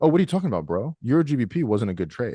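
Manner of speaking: put-on dismissive tone, feigned innocence. Acting out denying a good trade to people: mock gaslighting denial. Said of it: "just gaslight people when they say".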